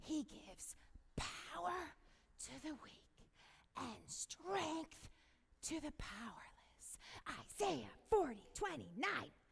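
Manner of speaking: hushed, breathy stage whisper, barely above breath. After telling everybody to be quiet, speaker reads a verse in a quiet voice. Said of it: "everybody's got to be quiet".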